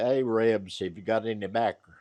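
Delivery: plain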